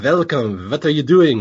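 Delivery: German accent, v for w in welcome, what. Demonstrating English with a German accent, where W's become V's: German accent, W as V. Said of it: "when you speak English with a German accent, the W's become V's, like".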